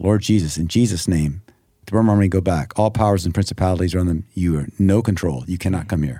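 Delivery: plain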